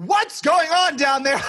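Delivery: very high, loud, worried and concerned calling voice. Retelling mom opening the basement door while they yell at a bat; imitating mom, so concerned. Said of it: "so concerned".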